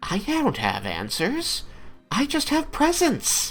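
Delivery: put-on very high, swooping, little-child voice. Narrating a game scene, voicing one of the laughing figures: high-pitched childlike voice. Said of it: "say in a in a high pitched voice".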